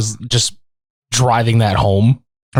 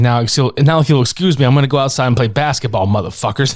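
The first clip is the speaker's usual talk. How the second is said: ordinary talk, nothing marked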